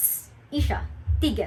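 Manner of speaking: put-on stern, scolding mom voice. Speaker quoting what another woman tells her when she gets too crazy, mom voice. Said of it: "in her mom voice".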